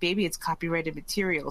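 ordinary talk

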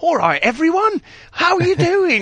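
put-on over-the-top English accent, high and swooping. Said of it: "be Dick Van Dyne and go".

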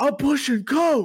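shrill, very high, loud shouted outburst. Retelling what a man yelled while putting Coke on a shelf, retelling a yell. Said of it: "He literally yells".

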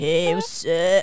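put-on voice of a typical boy. Showing the impression a friend says doesn't sound like a boy, doing a boy impersonation. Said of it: "a boy impersonation that I do".

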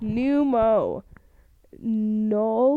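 really slow with drawn-out syllables. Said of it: "I'm gonna say this really slow".

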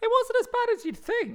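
very high, squeaky, mouse-like cartoon voice. Answering whether it was stressful, in an accidental Mickey Mouse-like voice. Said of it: "Why did I turn into Mickey Mouse?".

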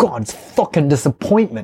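put-on pissed-off, disgusted, fed-up angry chef voice. Retelling how a chef reacts after spitting out bad food: imitating an angry Gordon Ramsay. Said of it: "he gets pissed off about it".

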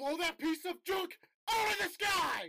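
high-pitched, slow, drawn-out yell.

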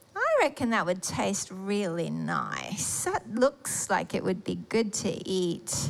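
low, slow, tempted musing tone.

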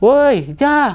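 high, loud, shouted call.

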